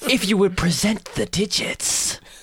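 put-on creepy shopkeeper voice. Voicing a shoemaker offering a fitting: creepy shopkeeper voice. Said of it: "I don't know if I like this new voice".

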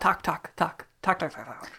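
whispered fake Swedish-sounding gibberish. Doing some Swedish for the others as a joke: mock Swedish accent. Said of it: "I'll do some Swedish".

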